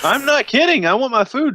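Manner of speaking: dead serious demanding voice. Playing a character complaining that nobody has taken an order: in-character demanding complaint. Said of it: "My character is serious about this".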